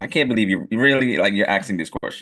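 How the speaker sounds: ordinary talk, nothing marked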